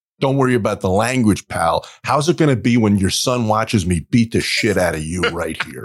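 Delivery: put-on furious man's voice. Retelling what a man said in a theater: imitating a furious man. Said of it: "this other dude was just rip shit furious".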